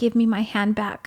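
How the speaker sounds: mock angry, upset woman's voice. Retelling what an upset woman demanded of the speaker, imitating her angry, upset tone. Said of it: "she was so angry and so upset".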